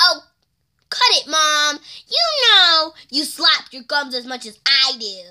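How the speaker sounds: snapping character voice. Talking back to her mom as Violet Beauregard. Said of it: "I'm Violet Beauregard".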